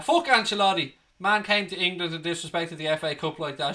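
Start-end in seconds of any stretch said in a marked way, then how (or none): none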